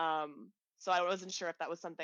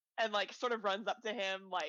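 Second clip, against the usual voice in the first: usual speaking voice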